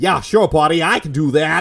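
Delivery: imitated American accent. Retelling a producer's request and the actor's answer: mock Jason Statham American accent. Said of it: "your mock one there was actually better than his real one".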